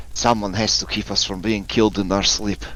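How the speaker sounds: hushed, half-whispered aside. Narrating a scene, the speaker voices a woman speaking to Tiernan in passing, half-whispering. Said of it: "she whispers to you".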